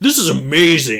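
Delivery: loud, boisterous, defensive voice. Imitating an imagined defensive movie fan: boisterous defensive voice. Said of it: "this really boisterous, like, defensive person".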